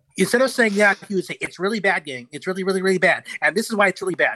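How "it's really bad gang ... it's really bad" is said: relentless, insistent pundit-style arguing, never letting up. Mocking a commentator who criticizes Trump: Ben Shapiro impression. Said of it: "everyone has a great Ben Shapiro impression".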